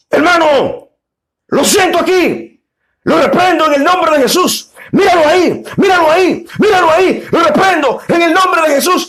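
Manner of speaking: fast preacher rant. Recounting a preacher's sermon to listeners, imitating a fast, loud preacher. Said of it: "empieza a hablar de una forma eh, rápida, sin pausa y con, y, y con una voz fuerte".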